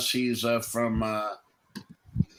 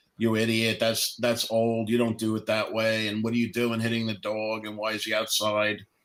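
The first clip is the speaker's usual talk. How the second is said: normal talking voice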